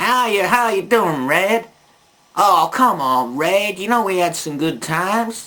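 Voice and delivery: funny, put-on rural country cowboy accent. Acting out how a man speaks, cowboy redneck accent. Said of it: "a funny accent, uh, like a cowboy or a, a redneck".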